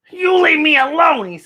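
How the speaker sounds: very high, squeaky little goblin voice. Narrator reads the frightened little goblin's reply to Herschel, in a squeaking goblin voice. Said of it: "he squeaked".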